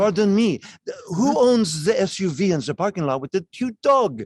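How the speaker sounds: put-on charming French accent, slightly high. Retelling how the proprietor Jean Charles asked in the tasting room: Jean Charles's charming French accent. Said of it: "is his charming French accent".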